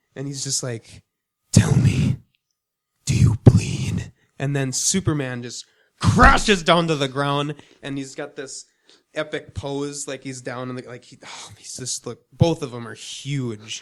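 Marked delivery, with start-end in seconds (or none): 1.5-4.1 deep, terrifying, slow and loud voice. Retelling a movie trailer scene: deep, terrifying Batman voice. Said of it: "it makes it deeper and more terrifying".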